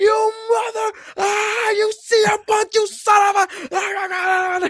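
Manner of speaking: mock furious Scottish accent, very high, very slow. Retelling a crowd recording of a fan cursing cm punk: imitating angry scottish shouting. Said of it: "just Scottish gibberish, just angry".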